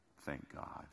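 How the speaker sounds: put-on under-breath whisper. Retelling what a girl at a reunion said on seeing him: imitating a whisper under breath. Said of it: "I saw her whisper under her breath".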